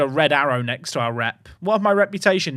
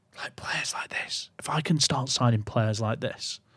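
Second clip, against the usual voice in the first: soft whisper, under the breath; 3 semitones lower, 8 dB quieter than usual. Talking to themselves while weighing which players to sign, whispering. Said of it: "Don't know why I'm whispering".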